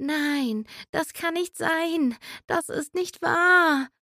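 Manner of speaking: soft, slow, mumbled sleep-talking murmur. Narrating a girl tossing restlessly in bed, her line is mumbling in her sleep. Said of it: "murmelte im Schlaf vor sich hin".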